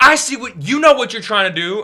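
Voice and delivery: very high, shrill, loud screaming. Retelling how a man at a restaurant screamed at the speaker: imitating someone screaming. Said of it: "screaming at me".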